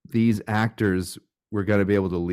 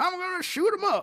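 put-on old Alabama voice, pitched higher; 4 dB quieter than usual. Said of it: "he's like an old Alabaman or something".

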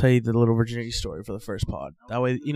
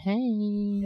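put-on woman's voice at a much higher pitch; 9 semitones higher, 6 dB quieter than usual. Redoing a friend's impression of a woman greeting him, imitating how she sounds. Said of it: "Try again".

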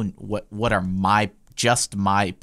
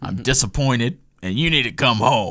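imitated Southern US accent; 3 semitones higher than usual. Retelling a phone call from dad: imitating dad from the South. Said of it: "he looks at her, he's like".

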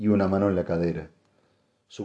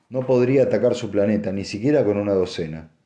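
ordinary delivery, nothing marked

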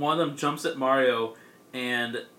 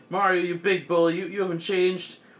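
acted, high, weepy, tearful sobbing voice; 5 semitones higher than usual. Retelling a story where Wario cries at Mario: imitating Wario crying. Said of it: "Wario's, like, crying 'cause he's like".

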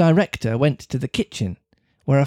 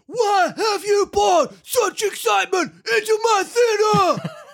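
very high, gravelly, stuffy congested ogre voice. Reading a story, voicing the huge fellow questioning Pinocchio: ogre with a cold voice. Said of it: "with the voice of an ogre suffering with a cold".

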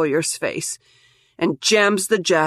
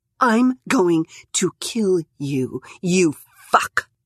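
deathly clear, every word distinctly pronounced. A woman, watching a man poke Rye's forehead, speaks slowly with deathly clarity. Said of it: "pronouncing every word with deathly clarity".

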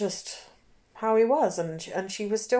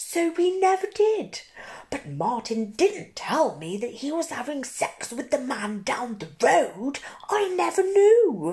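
high-pitched put-on woman's voice; 7 semitones higher, 4 dB louder than usual. Recounting a woman's own words about Martin: impression of a woman. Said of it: "It's a little bit weird doing an impression of her".

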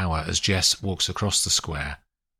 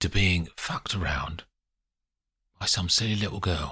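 hushed, whispering voice; 4 dB quieter than usual. Reading a story aloud, an angry man speaks up close: whispering. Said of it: "he says in a whisper".

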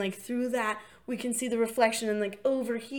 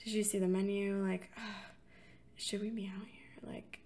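put-on hushed muttering, quieter; 10 dB quieter than usual. Retelling a couple discussing a restaurant's cost: imitating muttering under breath. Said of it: "discussing under their breath".

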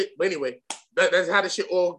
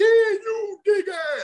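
very high, very slow, stretched-out delivery. You retell how you went to the spot and read for the part, trying a Cyrus voice. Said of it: "I did the whole".

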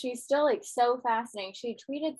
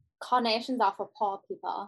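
put-on German accent. Asked by a co-host to do her german accent, speaking in a german accent. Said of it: "could you please do your German accent?".

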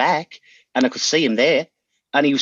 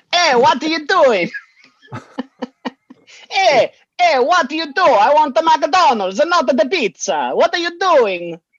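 put-on Italian accent, pitched very high; 13 semitones higher, 4 dB louder than usual. Acting out a prompt set in italy among friends, italian accent. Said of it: "It's got to be the same accent".

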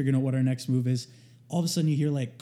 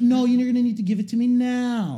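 put-on high, pushy, insistent yell, "now" drawn out; 9 semitones higher, 5 dB louder than usual. Retelling a driver's demand during roadwork: imitating someone yelling. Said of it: "and he's yelling".

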